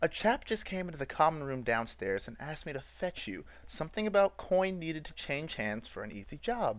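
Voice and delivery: put-on ditzy girl voice. A storyteller voices the halfling girl Reese addressing the group, ditzy halfling girl voice. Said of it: "she's kind of ditzy, so she's kind of like a ditzy blonde".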